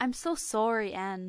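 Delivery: imitated Canadian accent. Giving a hint by quoting a line: put-on Canadian accent. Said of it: "it's supposed to be Canadian".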